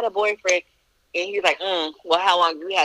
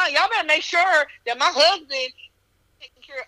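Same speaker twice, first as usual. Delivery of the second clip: high-pitched yelling, pitched way up; 10 semitones higher than usual. Retelling what she yelled at the nurses, retelling her own yelling. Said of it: "but I'm yelling. I'm like".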